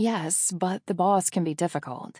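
ordinary delivery

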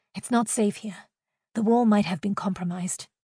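ordinary delivery

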